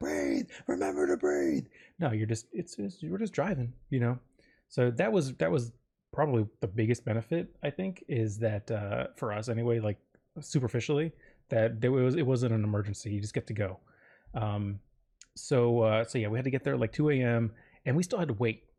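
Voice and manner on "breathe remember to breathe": mild, half-hearted mock yell. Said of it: "trying to hold her hand and yell".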